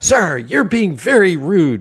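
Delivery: put-on woman's yelling. Retelling a woman on a subway yelling at a man: imitating a woman yelling. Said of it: "she starts yelling at him".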